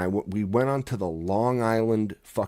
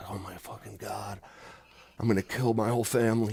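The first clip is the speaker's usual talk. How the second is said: put-on panicked tone, quieter; 6 dB quieter than usual. Retelling driving on a busy expressway as a new driver: imitating own past panic.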